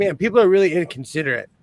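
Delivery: ordinary talk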